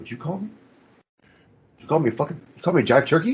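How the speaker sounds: suddenly dead serious. Speaker retells a movie scene where one guy gets called a jive turkey, acting out getting all serious. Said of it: "he gets all serious".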